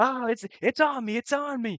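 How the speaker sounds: very high, drawn-out scream of terror. Voicing a character bitten by a dragon: screaming in terror. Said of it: "you can see him just kinda scream in terror".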